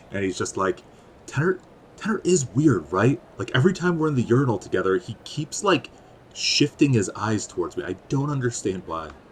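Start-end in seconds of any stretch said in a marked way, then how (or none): 1.2-9.0 hushed whisper. Retelling how he leans low and whispers to you about Tenor, whispering. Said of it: "and then he whispers down to you".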